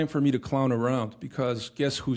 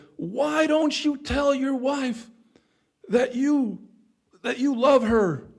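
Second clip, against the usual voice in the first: mock shrill, very high, drawn-out scream; 12 semitones higher, 4 dB louder than usual. Retelling a TV episode to another speaker: imitating Magda Gessler screaming. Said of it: "Magda Gessler was screaming at the guy".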